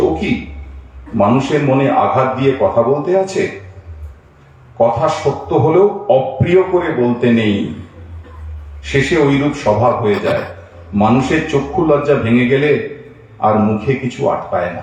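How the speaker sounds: ordinary delivery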